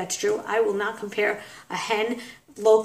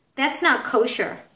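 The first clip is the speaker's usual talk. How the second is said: snide, snotty, bitchy put-down tone; 4 semitones higher than usual. Retelling what a schoolgirl said about a lollipop: imitating a girl's snide tone. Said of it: "her saying to me in this voice, in this tone".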